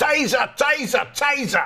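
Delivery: mock London accent, very high, yelled. Imitating Metropolitan Police officers using tasers: imitating police shouting, London accent. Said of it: "they do it in a London accent".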